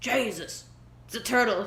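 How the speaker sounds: put-on, mock-mortified tough-guy voice. Telling a story about a friend's reaction, imitating Kron, mock-mortified tough. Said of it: "you sounded so mortified and tough".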